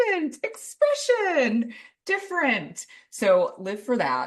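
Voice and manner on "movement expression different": very high, slow, airy, dreamy, artsy voice. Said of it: "the daughter of doctors is like".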